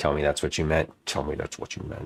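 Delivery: menacing, threatening, very low voice. Pressing the other speaker about what they meant about the pie shells, in a threatening voice. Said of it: "That was my most threatening voice".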